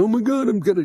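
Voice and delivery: put-on strained grimace. Describing people who struggle, imitating someone grimacing with strain. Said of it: "they're not grimacing like".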